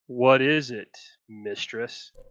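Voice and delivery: low, deep-pitched guttural character voice. Asking to give a character's line a try, then saying it in a deep, guttural voice. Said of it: "deep, guttural voice".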